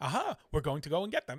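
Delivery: fast, rapid-fire patter. Describing a story led by Acton, quoting his speech: imitating Acton's speech. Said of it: "All of Acton's speech was just like".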